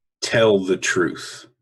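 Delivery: commanding voice. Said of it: "I'm gonna use commanding voice".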